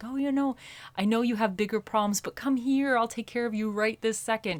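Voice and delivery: tempting, seductive tone. Voicing the devil card's energy: seductive tempting voice. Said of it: "the devil is like the seductive energy".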